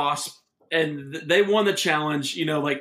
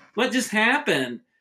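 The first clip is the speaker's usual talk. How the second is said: put-on pitched-up, confused small girl voice; 5 semitones higher than usual. Acting out a confused Kittle reacting to a play in the game, Kittle's little girl voice. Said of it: "he has his little girl voice goes".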